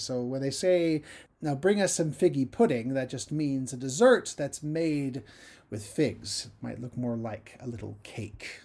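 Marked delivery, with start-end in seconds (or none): none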